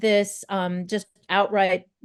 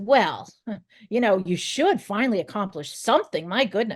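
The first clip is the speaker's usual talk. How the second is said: put-on hateful, belittling, contemptuous voice. Acting out the inner voice after doing something good: imitating a hateful inner voice. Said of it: "it says".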